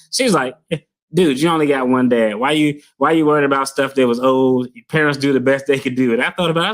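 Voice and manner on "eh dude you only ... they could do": condescending, dismissive, know-it-all, talking-down tone. Retelling what the wife said about fathers: imitating a condescending tone. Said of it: "she said it in a real condescending way".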